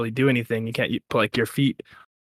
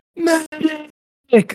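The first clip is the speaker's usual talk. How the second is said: put-on, very high, top-of-the-lungs yell. Retelling how a man snapped his ankle, the speaker repeats his call, retelling a full-lung shout. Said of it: "he shouts at the top of his lungs".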